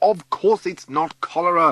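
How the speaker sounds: sudden shouted outburst, high and loud. A sick speaker, told by the doctor to rest, answers by shouting. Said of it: "I didn't mean to shout".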